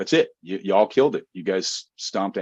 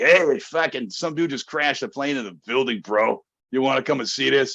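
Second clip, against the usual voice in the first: high, bad put-on New York accent; 5 semitones higher than usual. Retelling what his New York roommate told him as he was leaving: horrible New York accent. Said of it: "he had a horrible accent".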